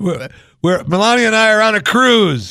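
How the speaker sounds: loud, very high voice, sounding distant like a phone. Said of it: "Trump sounds like he's just talking through a crappy phone".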